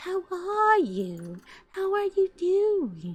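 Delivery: soft, breathy, put-on sweet voice. The speaker mimics a soft-spoken acquaintance who creeps them out, imitating a breathy voice. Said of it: "this breathy".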